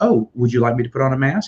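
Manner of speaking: very polite, courteous, accommodating tone. Retelling how the wait staff spoke: imitating someone very polite. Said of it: "just very polite".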